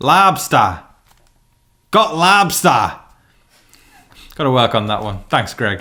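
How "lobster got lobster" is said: put-on New England Boston accent. Trying out an accent while someone laughs: boston accent. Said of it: "the Boston kind of New England accent".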